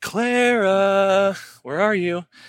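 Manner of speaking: lilting, sing-song calling-out voice. Retelling calling out for clara like every parent: sing-songy parent voice. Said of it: "the little classic parent sing-songy kind of voice".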